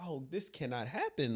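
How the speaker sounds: plain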